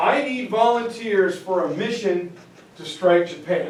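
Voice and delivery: ordinary talk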